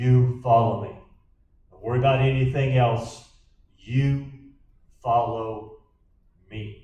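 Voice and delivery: FOLLOW ME said loud and emphatic. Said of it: "Jesus says emphatically".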